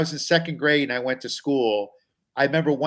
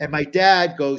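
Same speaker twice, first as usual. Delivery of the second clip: ordinary talk, nothing marked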